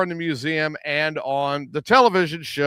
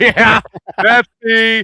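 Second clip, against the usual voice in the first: loud, high, mock cracking up laughing; 6 semitones higher, 9 dB louder than usual. Speaker acts out the reaction of a person seen on camera: imitating Volk cracking up. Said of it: "he's cracking up like".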